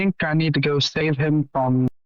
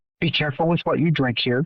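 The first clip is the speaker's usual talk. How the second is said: confiding, discreet delivery. Speaking to another character after talk of an agent, said very quietly. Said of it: "I say that very quietly".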